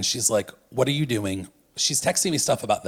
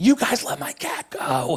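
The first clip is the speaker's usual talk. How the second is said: put-on young child's scream, higher; 5 semitones higher than usual. Retelling what a fifth grader on the bus screamed: imitating a fifth grader screaming. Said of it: "the fifth grader on the bus is screaming".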